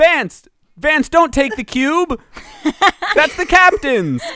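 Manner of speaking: high-pitched yelling shout. Playing a character in a game, shouting out to Vance. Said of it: "and I shout".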